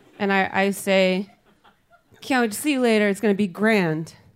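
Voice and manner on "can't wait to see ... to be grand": ordinary delivery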